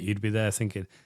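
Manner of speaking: normal talking voice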